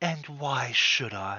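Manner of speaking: soft, hushed, creeping voice. In a game, voicing a voice heard from the sword, soft creeping voice. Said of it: "you just hear a soft voice that sort of creeps up over your shoulder".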